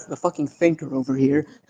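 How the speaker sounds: muttered aside, hushed half-whisper under the breath. Acting out a woman's joking aside in a scene, half-whispering under her breath. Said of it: "she whispers under her breath".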